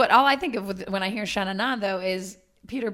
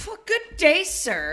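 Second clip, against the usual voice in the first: very slow, drawn-out, pitched-up, sassy and dismissive; 7 semitones higher than usual. Acting out a reply to someone saying you're late: imitating a sassy brush-off. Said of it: "they're just being a little sassy".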